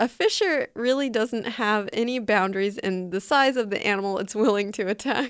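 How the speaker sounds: ordinary talk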